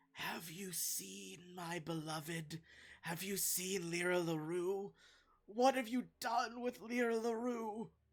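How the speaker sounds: raspy creature voice. Describing what the listeners hear, voice an unseen speaker: raspy voice. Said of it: "like, raspy voice say".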